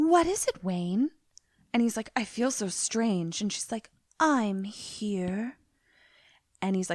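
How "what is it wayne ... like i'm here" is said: mocking, put-on, very affected manner of speaking. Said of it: "everything she says is in a very affected".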